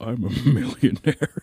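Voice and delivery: boastful, half-whispered stage whisper. Imitating what a cartoon Markiplier keeps half-whispering in your ear: half-whispering as Markiplier. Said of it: "That's what he keeps whispering in your ear".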